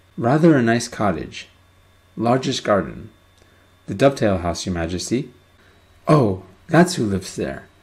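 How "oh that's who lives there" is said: breezy, airy, careless offhand tone. King Fred answers someone telling him about the Dovetail House, airily. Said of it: "said King Fred airily".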